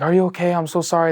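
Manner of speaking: panicked. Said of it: "They're freaking out".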